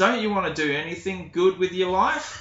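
put-on loud drunken voice. Retelling what they said to her outside on a crowded evening, loudly and a bit drunkenly. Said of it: "I say quite loudly and a bit drunkenly".

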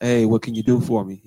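put-on stern tone. Acting out haggling with car sellers: imitating a stern tone. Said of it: "I come in with a stern".

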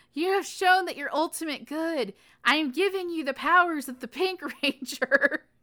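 high delivery, words breaking up with laughter. Describing a scene from a show to another speaker: laughing while talking. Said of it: "I can't even describe it without laughing".

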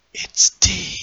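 soft, hushed, close whisper. A man leans his elbow on the listener's shoulder; whispering. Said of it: "and just whispers".

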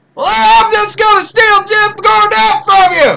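put-on Deep South accent, promoter-style voice. Taunting the other speaker in a put-on voice: Deep South redneck promoter voice. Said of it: "You sound more like a Deep South redneck promoter".

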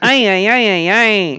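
high-pitched shout. Ending a comedy bit with a quick Alpha 5 impression. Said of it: "That's my Alpha 5 impression".

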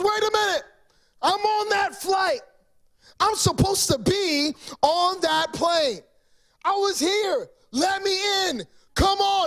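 a man screaming, high-pitched. Retelling how a passenger shouted after the plane door closed: imitating a man screaming. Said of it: "And he's screaming".

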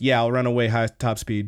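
put-on flat deadpan delivery. Retelling a scene from a show, quoting Hina's reply, imitating Hina's deadpan. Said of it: "she deadpans it so good".

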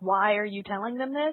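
normal talking voice

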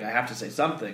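normal talking voice

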